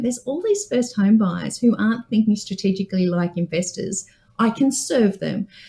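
ordinary delivery

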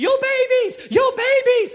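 very high, shrill, drawn-out screaming cry. Retelling a lady who came to the front door, imitating a lady screaming.

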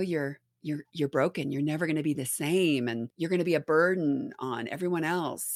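mild, gentle put-on voice. Retelling what another voice in their head said: imitating a soft voice. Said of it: "soft and, you know".

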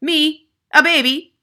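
very loud, high-pitched shout of disbelief. A woman rounds on a boy after his remark, shouting. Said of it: "shouted the Trunchbull".

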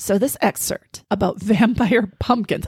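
words broken up by laughing. Introducing a book excerpt to the other speaker, laughing while talking. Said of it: "I can't even say it without laughing".

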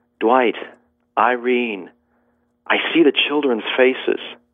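put-on clear, lucid voice full of awestruck wonder. Speaker recounts what a grieving man suddenly said, retelling a clear, wondering voice. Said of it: "said in a very clear voice, filled with wonder".

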